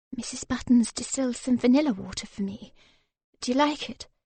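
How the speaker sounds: hushed, soft voice. Narrating a story, Vivian answers him: hushed voice. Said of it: "Vivian answered in a hushed voice".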